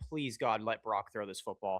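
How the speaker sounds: small, pleading, prayer-like tone. Imagining a defender hoping for a bad throw: imitating a defender praying. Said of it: "he's literally sitting there praying".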